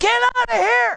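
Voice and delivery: very high, loud shriek. Retelling how a woman reacted when he walked into her back room: imitating a woman screaming. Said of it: "she says".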